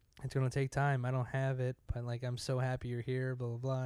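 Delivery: ordinary delivery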